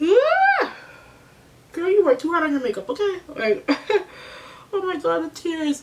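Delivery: high, tearful voice. Recalling how bad a past moment made her feel, tearing up. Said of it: "don't cry".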